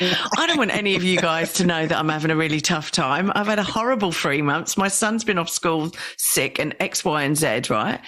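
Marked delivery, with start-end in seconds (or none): none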